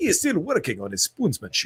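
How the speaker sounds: toned-down proper accent, not exaggerated, swooping pitch. Showing the accent used in a commercial instead: more proper accent. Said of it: "a more proper accent".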